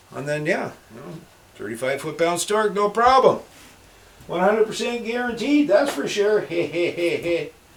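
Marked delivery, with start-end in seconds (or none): 6.4-7.4 high, pitched-up comic-book villain voice. Breaking off from a repair story to do a quick Chuckler impression. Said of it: "that's my impersonation of the Chuckler".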